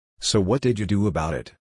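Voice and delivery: plain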